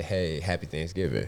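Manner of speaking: plain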